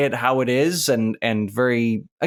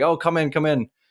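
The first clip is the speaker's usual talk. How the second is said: mock full-mouth speech, higher in pitch; 3 semitones higher than usual. Retelling how a masseuse answered the door, imitating talking with mouth full. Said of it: "had a mouthful of food".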